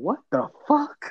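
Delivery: put-on, startled, surprised, high-pitched outburst. Retelling his girl's reaction, imitating a surprised outburst. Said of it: "she was surprised that she cussed".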